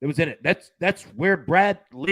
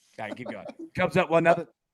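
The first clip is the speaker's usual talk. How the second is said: plain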